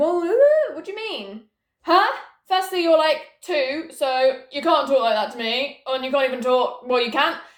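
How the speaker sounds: play-acted indignant, scolding tone. Retelling mum's reply: imitating her mum scolding. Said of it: "And then she's like".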